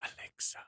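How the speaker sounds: very quiet, barely audible whisper. Mentioning Amazon's Alexa, whispering so nobody's starts: whispered Alexa. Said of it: "I'm just whispering it so nobody would start their own".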